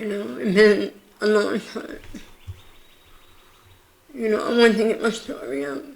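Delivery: talking on through tears, tearful, crying. Telling the story of getting through chemotherapy, crying while talking. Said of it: "I'm not crying 'cause I'm sad".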